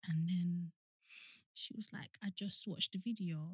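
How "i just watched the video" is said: quieter, put-on tearful, crying voice. Retelling what a scared child said after watching a video: imitating someone crying. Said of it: "she was, like, crying at this point".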